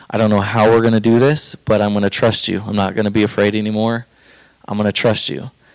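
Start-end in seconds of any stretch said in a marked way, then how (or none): none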